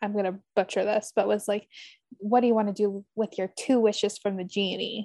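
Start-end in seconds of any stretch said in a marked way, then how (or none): 2.2-5.1 put-on, suggestive, sexy reading, lower voice. Quoting an opening line from a Facebook group, reading it suggestively. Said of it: "the way you said it was so sexual".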